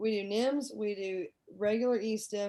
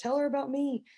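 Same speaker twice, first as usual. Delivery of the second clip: mock shouted, high-pitched yell; 5 semitones higher, 3 dB louder than usual. Retelling a patient calling out during a Zoom meeting: imitating someone yelling. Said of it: "he's yelling to Miss Martin".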